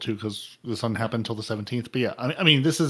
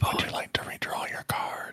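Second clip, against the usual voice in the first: hushed voice, quieter. Asking another player about a card: whispering. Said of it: "You can do whispering better than me".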